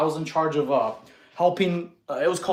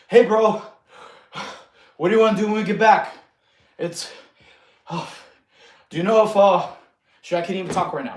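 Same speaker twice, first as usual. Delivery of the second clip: fake panting, out-of-breath speech, louder; 2 semitones higher, 6 dB louder than usual. Showing how talking while jogging too fast sounds: mock out of breath while talking. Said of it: "That's not conversation pace".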